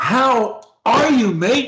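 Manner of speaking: energetic, passionate, slow and high voice. Showing a learner how to say a phrase: energetic, passionate delivery. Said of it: "with energy, with passion".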